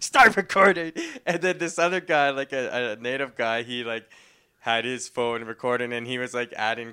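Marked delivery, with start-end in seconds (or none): 0.0-0.9 put-on hyped, amped-up shout, very high, very loud. Recounting what a lady said as someone was held down, mimicking an amped-up woman. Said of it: "she was just like really amped".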